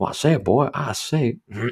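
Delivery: high cartoon rooster voice. After a few beers, the speaker slips into a Foghorn Leghorn impression. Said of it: "my fucking foghorn leghorn over here now".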